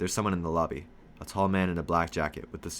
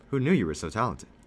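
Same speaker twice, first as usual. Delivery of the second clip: ordinary delivery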